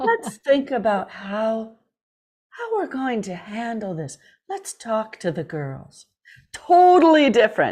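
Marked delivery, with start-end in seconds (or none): 0.0-6.1 put-on soft whisper, quiet soft talk, quieter. Retelling how an uncle figure handled the bullying: imitating a soft whisper. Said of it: "he'd whisper and talk softly".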